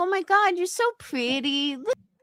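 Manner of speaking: put-on squeaky, very high baby talk voice. Mocking someone in super chats: mocking baby voice. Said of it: "that baby voice".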